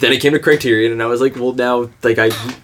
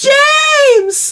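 higher-pitched put-on 1800s orphan boy voice; 4 dB louder than usual. Imitating Mia Goth in a movie: Mia Goth impression. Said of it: "sounds like an eighteen hundreds orphan boy".

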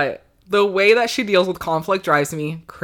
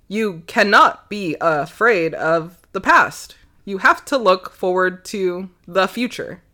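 put-on mechanical, machine-like robot voice. Describing a character whose AI programming glitches, quoting her in a robot voice. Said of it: "In her best kind of robot voice".

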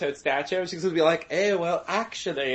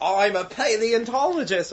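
slow, high-pitched put-on Australian accent; 5 semitones higher than usual. Imitating what a woman said about herself, in an Australian accent. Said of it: "that's australian".

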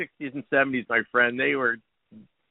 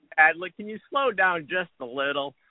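ordinary talk

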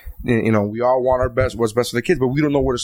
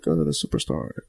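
put-on mutter under the breath, much lower, quieter, slower; 9 semitones lower, 6 dB quieter than usual. A parent retelling a woman's remark about her daughter, imitating a mutter under her breath. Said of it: "She said that like under her breath".

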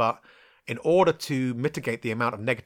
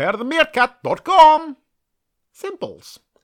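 high, slow shout with a swooping tune; 10 dB louder than usual. Quoting the advert's line, doing the voice: meerkats from the advert voice. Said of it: "I always end up sounding like the, um, fucking meerkats from the advert".

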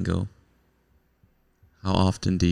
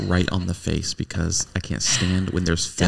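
plain

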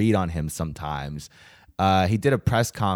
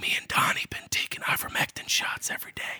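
put-on stage whisper under the breath. Doing an impression with another speaker, whispering in an impression. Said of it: "Our impression is just whispering".

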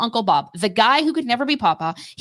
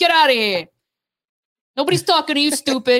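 put-on Italian-sounding accent, higher; 4 semitones higher than usual. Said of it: "I wanna use that accent with the enemy".

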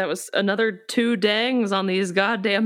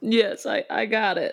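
very slow speech, cracking up laughing mid-line. Answering in character whether the deputy can draw it: laughing while talking. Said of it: "I'm crying".

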